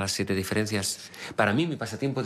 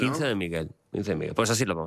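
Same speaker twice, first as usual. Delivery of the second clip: ordinary delivery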